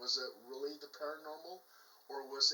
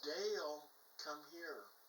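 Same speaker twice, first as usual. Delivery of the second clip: imitated eerie call, quieter; 7 dB quieter than usual. Retelling a frightening night encounter: imitating a woman calling like his mother. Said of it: "she was mimicking my mother's voice".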